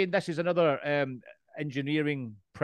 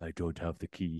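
dead serious, very low and soft voice; 9 semitones lower, 9 dB quieter than usual. Speaker retelling a movie scene, doing Keanu Reeves in the most serious voice ever. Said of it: "the most serious voice ever".

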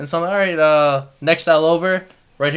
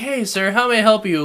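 mock-cheery, put-on bright cheery tone; 6 semitones higher than usual. Imitating American customer service staff, mock-cheery customer service tone. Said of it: "Put a little thing in my voice".

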